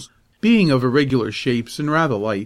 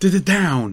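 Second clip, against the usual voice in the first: high, winded, out-of-breath panted words; 5 semitones higher than usual. Peaches finally pins Teeter's face in the snow after a struggle; panting. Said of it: "finally panted Peaches".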